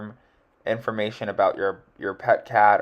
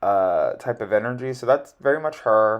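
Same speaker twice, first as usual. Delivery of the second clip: ordinary delivery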